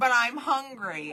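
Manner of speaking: put-on acted old woman voice. Retelling her husband's dad joke, the speaker does the Marianne old lady voice. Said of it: "that's his old lady voice".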